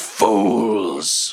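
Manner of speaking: drawn-out snarling beast voice like a dragon. Narrating the dragon appearing from the ruined roof: snarling dragon. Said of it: "the dragon appears and snarls".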